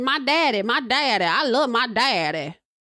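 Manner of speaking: slow, dragged-out, drawn-out way of talking. Imitating how a woman talks about her father: imitating how she talks. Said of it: "That's how she talks".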